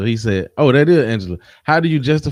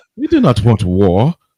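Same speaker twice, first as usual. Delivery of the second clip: put-on, fake French accent; 3 dB louder than usual. Imitating france refusing to get involved: put-on french accent. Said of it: "I was trying to sound French".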